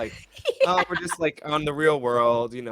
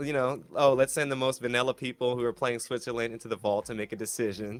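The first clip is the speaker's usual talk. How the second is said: normal talking voice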